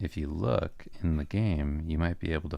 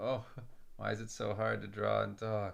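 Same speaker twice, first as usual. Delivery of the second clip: high, soft, whiny, complaining voice. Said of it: "the stream just like".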